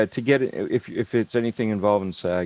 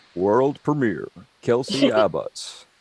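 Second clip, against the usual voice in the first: slightly deeper radio announcer voice. Saying a requested phrase for friends: slightly deeper radio voice. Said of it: "I just throw a little deeper".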